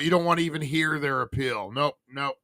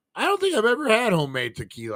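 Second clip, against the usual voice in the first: voice cracking mid-sentence, pitched up, quick; 7 semitones higher than usual. Having some homemade tequila mid-talk, speak with your voice cracking. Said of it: "why my voice cracked like that".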